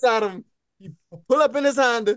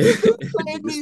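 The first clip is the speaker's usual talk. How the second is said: words spoken while crying, tearful; 4 semitones higher than usual. Retelling a story, quoting a girl who just got in the car: imitating someone crying. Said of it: "she crying".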